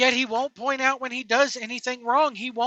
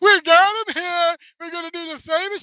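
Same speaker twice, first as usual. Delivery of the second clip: mock socially awkward voice; 5 semitones higher, 5 dB louder than usual. Showing how Tony Khan does it, in a Tony Khan impression. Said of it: "That's how he's talking".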